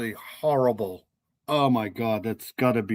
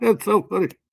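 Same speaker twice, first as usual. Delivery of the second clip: loud, high-pitched talking through laughter; 9 semitones higher, 5 dB louder than usual. Reacting to a serious phone call, laughing while talking. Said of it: "I gotta stop laughing tonight".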